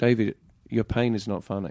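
dead-straight, expressionless, totally flat deadpan. Retelling what a counselor said after the speaker burst out laughing, imitating a deadpan delivery. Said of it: "he just deadpan was like".

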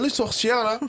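clumsy, bad Québécois accent, very high pitch. Recalling his earlier attempt at a Québécois accent: bad Québécois accent. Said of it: "j'ai fait un accent, euh, québécois".

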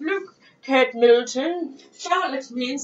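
put-on posh accent. Acting out a couple looking up a baby name's meaning, in a posh voice. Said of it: "that's my posh voice".

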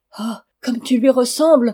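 exclaiming. A narrator reads a father's words to his son, exclaiming. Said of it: "s'écria-t-il".

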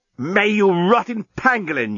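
loud, full, shouted outburst. Narrator reads the journalist's outburst, yelling. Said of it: "yelled the journalist".

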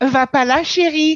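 exaggerated, super camp voice, high and loud. Urged on by friends, doing their own version in a super camp voice.

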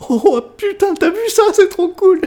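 put-on very high, giddy, excited childlike voice. Retelling a film character's reaction after blowing everything up mid-fight; imitating a kid. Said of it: "un gamin".

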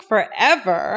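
the word forever stretched long. Giving examples of saying words with the right pronunciation: stretched-out forever. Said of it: "I like how you stretch that out".

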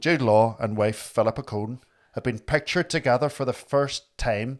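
put-on newsreader voice in a Northern Irish accent. After greeting a Northern Irish viewer, the speaker reads on in a Northern Irish accent. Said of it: "In a Northern Irish accent".

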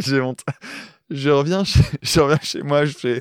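laughing while talking. Starting an embarrassing story while another speaker waits: laughing while talking. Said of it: "de t'entendre rire".

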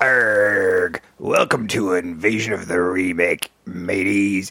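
pirate voice, long drawn-out "arrgh". Opening the show, welcome the audience in a pirate voice. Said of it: "It is Talk Like a Pirate episode".

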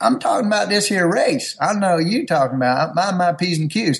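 put-on announcer voice with Southern accent. Talking about a race while the other speaker notices his changed voice, NASCAR announcer voice. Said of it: "you're doing NASCAR announcing".

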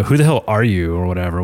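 bad, horrible put-on valley girl voice. Retelling a scene where one character confronts another, horrible Valley Girl accent. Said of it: "my horrible Valley Girl accent there".

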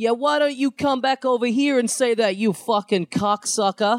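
bad, high, put-on New York accent street yell. Retelling what a man yelled at a cyclist on the street: bad New Yorker impression. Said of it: "bad ... New Yorker impressions".

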